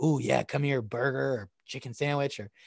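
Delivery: put-on lazy, bitchy voice. Acting out the inner voice that says to stay in bed: voicing the inner bitch voice. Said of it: "'Cause that bitch voice is like".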